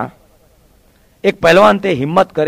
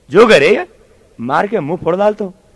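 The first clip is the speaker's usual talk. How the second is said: usual speaking voice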